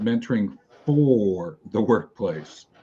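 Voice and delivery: hard stress on the word "for". Opening a presentation, purposefully emphasizing a word in the title: stress on for. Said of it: "I'm em- emphasizing a word".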